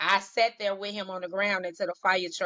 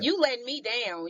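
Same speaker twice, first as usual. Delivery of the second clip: slow, mock angry voice; 4 semitones higher than usual. Retelling what was said to god in prayer: imitating own angry voice. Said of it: "talked to God with my angry voice".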